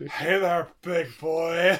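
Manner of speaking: very slow, drawn-out tree voice. Joking about a movie scene, voicing the tree. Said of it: "the tree is just".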